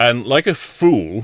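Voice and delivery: ordinary talk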